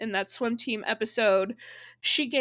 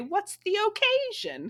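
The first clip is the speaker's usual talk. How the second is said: very high, careful, precise enunciation of occasion; 10 semitones higher than usual. Quoting a character's line while pointing out the way she enunciates: imitating Willow's careful enunciation. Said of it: "The way she enunciates".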